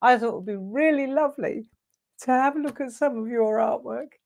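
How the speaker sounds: tearful crying with voice cracking and breaking. Speaker starts crying while saying they wanted to look at some artwork: crying, voice breaking. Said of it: "I don't know why I'm crying".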